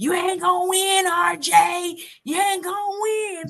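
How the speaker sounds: very high-pitched yelling. Retelling what Griff yelled backstage: imitating Griff yelling. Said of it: "Griff was backstage yelling".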